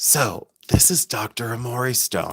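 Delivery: soft, slow, hushed, intimate whisper. Offering a lecture on a stone after being asked: whispering. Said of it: "Let me whisper it to you".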